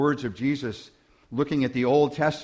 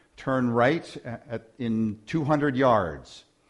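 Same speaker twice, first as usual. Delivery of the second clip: usual speaking voice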